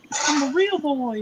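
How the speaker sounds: very high, squeaky toy voice. Friends react as one speaker performs a line; high-pitched voice. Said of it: "he says with a high pitched voice".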